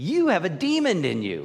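forceful, emphatic, swooping, drawn-out delivery. Retelling interrupting a talking man, getting loud. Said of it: "I just get loud and I interrupt him".

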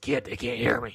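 rough, gruff voice. Comparing how the game voice sounds to the movie: gruff voice. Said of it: "you hear that gruff voice".

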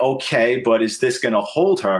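ordinary talk

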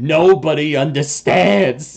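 menacing, scary, spitting hissing voice. Voicing a character now sounding scary: scary hissing voice. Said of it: "hissing and just, like, like, spittle is just flying".

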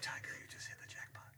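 whispered delivery.

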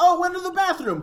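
shrill, high-pitched shout. Recapping a scene where Giorno grows suspicious, imitating Narancia yelling. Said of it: "Narancia was yelling".

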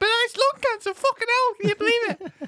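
high, silly mock Scottish accent. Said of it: "I don't know why I'm Scottish".

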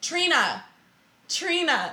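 high-pitched, mild, held-back calling out. Showing how a mother would normally call her kid, shouting a kid's name. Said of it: "Instead of shouting like".

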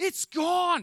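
very high-pitched, loud yell. Retelling a man yelling in the bathroom: imitating someone yelling. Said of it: "And he's yelling in the bathroom".

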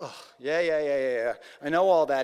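mock impatient, loud, dismissive brush-off. Retelling how the man interrupts Jesus: imitating an impatient eye-rolling man. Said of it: "he's quite impatient, he interrupts Jesus".

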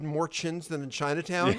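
plain

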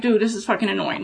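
plain

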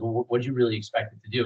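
mock flat, expressionless delivery. Retelling what a police officer told the neighborhood watch: imitating a cop's deadpan. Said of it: "deadpanned me".

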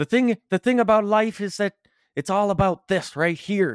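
put-on Newfoundland accent. Quoting what he said about life, in a Newfie accent. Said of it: "in a newfie accent".

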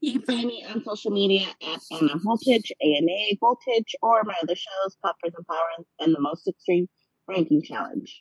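robotic, machine-like voice. Listing her social media handles and other shows, sounding like an AI. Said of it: "you sound like an AI".

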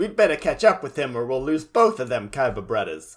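usual speaking voice

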